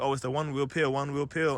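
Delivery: normal talking voice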